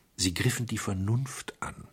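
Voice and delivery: plain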